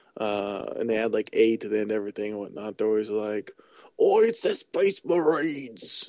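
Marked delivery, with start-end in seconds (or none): 4.0-6.1 put-on, pitched-up Cockney accent as fantasy orc. Describing a game's orcs and imitating them: orcs' Cockney accent. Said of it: "the orcs have this British kind of Cockney accent".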